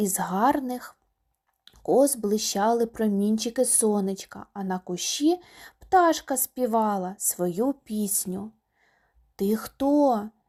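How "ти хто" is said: frightened, fearful voice. A little hare asks the spring princess who she is, frightened. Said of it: "перелякано запитав зайчик".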